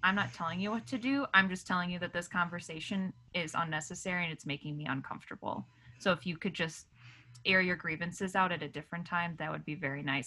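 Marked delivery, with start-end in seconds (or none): none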